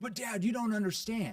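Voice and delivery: high-pitched, defensive, pushing-back tone. Explaining how tone affects a son's reaction, imitating a defensive son. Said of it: "Get defensive".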